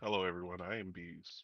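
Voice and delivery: very quiet, dejected, lifeless, depressed voice. A podcast co-host introduces themselves at the episode's opening: depressed-sounding. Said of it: "You sound so depressed right".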